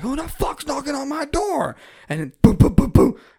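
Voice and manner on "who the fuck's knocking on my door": put-on, very high-pitched, hollered shout. Retelling loud knocking on the door at night: imitating own past yell. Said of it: "I started yelling".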